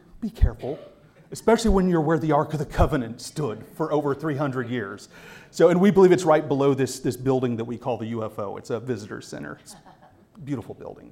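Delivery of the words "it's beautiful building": whispered, hushed, heavily sarcastic jab. Describing the visitor center people call the UFO, with all sarcasm. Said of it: "and I say that with all sarcasm".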